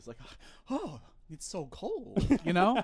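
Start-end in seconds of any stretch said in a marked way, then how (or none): 0.7-2.3 very slow, drawn-out, sing-song, faintly pleased delivery. Showing how to say a movie character's last words: slightly more pleased tone. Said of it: "a slightly more pleased tone of voice".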